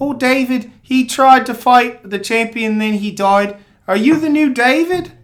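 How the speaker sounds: put-on strong, thick New Zealand accent. Retelling a scene with Thor, the speaker voices Korg with a strong New Zealand accent. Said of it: "he's got a really strong New Zealand accent".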